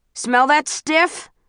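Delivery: loud jeering voice. Peter asks the narrator, over the cackling, in a voice louder than the cackling. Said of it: "his voice louder than even the cackling".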